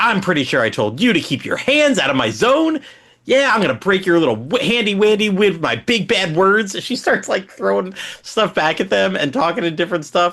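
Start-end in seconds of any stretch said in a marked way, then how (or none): 0.0-6.8 put-on woman character voice, threatening. Retelling a scene, speaker acts out the woman's lines; imitating a woman character. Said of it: "she's like".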